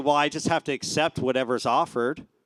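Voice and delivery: ordinary delivery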